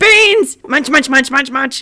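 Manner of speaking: loud, huffy, affronted, indignant creature voice. Voicing a creature that flaps its wings indignantly: indignant creature voice. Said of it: "gives an indignant flap of its wings and goes".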